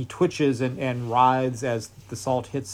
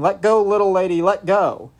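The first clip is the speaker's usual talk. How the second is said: all-out shrieking, high, loud scream; 6 semitones higher, 6 dB louder than usual. A Pinkerton man held by the leg kicks to get free, screaming. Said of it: "He's screaming".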